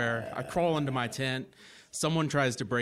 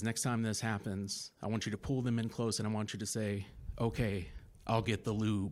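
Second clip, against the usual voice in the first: put-on whisper, lower and quieter; 3 semitones lower, 7 dB quieter than usual. Retelling how a police officer leaned in close: imitating a whisper. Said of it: "he whispers in my ear".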